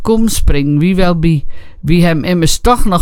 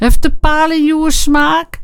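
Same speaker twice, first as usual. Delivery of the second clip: very high, brassy, blaring, bellowed shout; 11 semitones higher than usual. Narrating the friend Teunis calling out as he arrives: blaring. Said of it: "schetterend Teunis".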